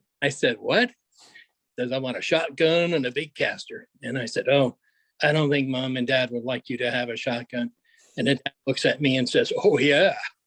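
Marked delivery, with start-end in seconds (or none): 1.9-3.9 put-on Georgia Southern accent. Retelling an eight-year-old repeating his request, in a put-on Georgia accent. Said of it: "in my best Georgia accent said".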